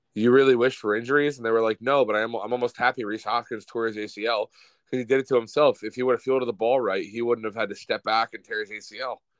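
ordinary delivery

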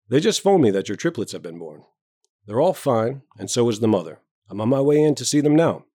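plain reading voice

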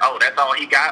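normal talking voice

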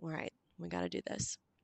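very quiet, under-the-breath mumbling. Retelling the group's talk all weekend: imitating mumbling.

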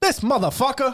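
very high-pitched exclamation flung out. Imagining a famous guest reacting to dropped-off food: Samuel Jackson voice. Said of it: "he's like".

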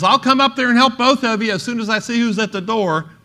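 loud, high-pitched yell. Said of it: "And then she yells".

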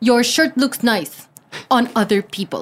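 exaggerated, played-up, put-on Russian accent. Asked to try a russian accent, saying something in it: russian accent. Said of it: "How do you do Russian accent?".

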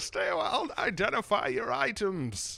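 loud, high, warm call-out. Doing an impression for the other speaker who asked to hear it: Deckard Cain voice. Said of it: "in the room with Deckard Cain right now".

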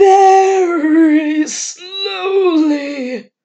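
crazy shrill loud voice, very drawn out. Mocking Harold, one of them pretends to answer as him: crazy voice mocking Harold. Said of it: "would answer in a crazy voice".

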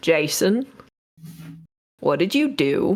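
put-on Southern accent. Playing a character who asks Jason what he did: southern accent. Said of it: "I'm forgetting my southern accent".

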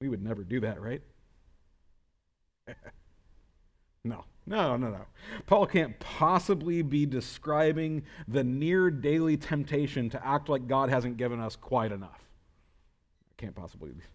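heavy, sarcastic, ironic tone. Preaching to the congregation about grumbling against God: sarcastic. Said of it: "I'm being more sarcastic today than maybe I should be".

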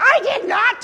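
very high-pitched, squeaking little voice. Telling a joke, the voice from across the room answers back in a squeaky voice. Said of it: "the squeaky voice from the other side of the room goes".

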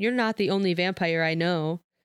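ordinary delivery, nothing marked

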